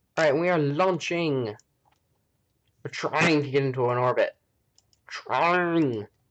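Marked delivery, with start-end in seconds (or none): 5.1-6.1 cartoon frog character voice. Speaker repeats a single word, doing a Kermit the Frog voice. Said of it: "I sound like Kermit the Frog".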